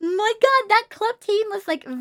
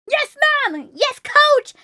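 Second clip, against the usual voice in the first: put-on firm, loud, high-pitched shout; 6 semitones higher, 4 dB louder than usual. Showing how they must answer the coach, in a loud answering voice. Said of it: "answer them with a, a loud voice".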